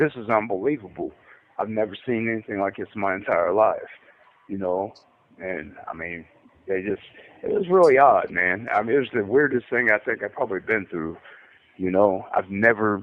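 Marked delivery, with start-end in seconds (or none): none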